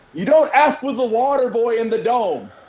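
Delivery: play-acted, high-pitched, shrill holler. Retelling a fan shouting in the crowd: imitating someone yelling. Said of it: "one guy yells".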